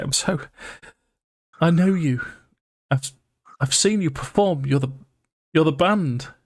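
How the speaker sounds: high-pitched, crying, blubbering babble through tears. Voicing a frightened woman who recognizes the party: blubbering woman's voice. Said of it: "as she's blubbering, she'll just say".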